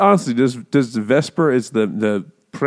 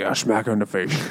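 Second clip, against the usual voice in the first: put-on Scottish accent, lower and quieter; 3 semitones lower, 6 dB quieter than usual. Retelling an interview's answer: Sean Connery impression. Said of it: "That's exactly how it sounds".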